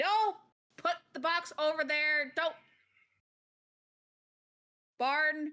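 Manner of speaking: loud, high-pitched woman's voice projecting far. Narrating arrival at the quartermaster's tent, voicing someone heard inside: loud female voice. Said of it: "you hear a loud female voice going like".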